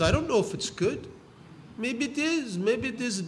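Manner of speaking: put-on a touch of Yiddish accent. Telling a story, voicing a man answering his congratulating neighbors, slight Yiddish accent. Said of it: "He has a little bit of a Yiddish accent".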